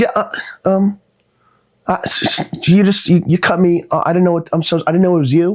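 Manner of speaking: high, flustered, stumbling, tongue-tied stammer. Retelling a woman's reply after a traffic run-in: imitating a flustered, stammering woman. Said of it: "she's lost in my coolness".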